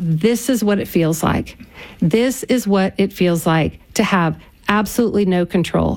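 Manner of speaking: usual speaking voice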